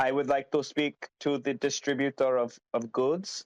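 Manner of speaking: put-on Indian accent. Retelling calls to a government agency, imitating a caller's indian accent. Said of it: "very distinct Indian accents".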